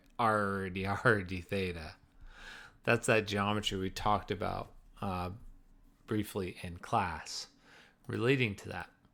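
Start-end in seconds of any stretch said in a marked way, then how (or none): 0.2-2.0 speaking in a pirate voice. Teacher explaining polar coordinates from class, talking like a pirate. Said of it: "and then talking like a pirate".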